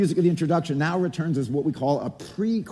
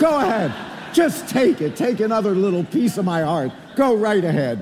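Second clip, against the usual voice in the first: put-on reproachful grandmother voice; 4 semitones higher, 4 dB louder than usual.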